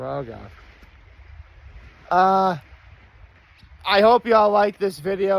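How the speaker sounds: tearful voice, on the edge of tears. Closing a YouTube video, the creator speaks to viewers, welling up with tears. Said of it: "I was starting to well up, there's a tear".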